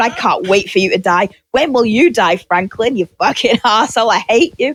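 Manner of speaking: hateful ranting. Retelling what was said while watching the film: imitating own angry ranting. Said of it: "I'm watching it going".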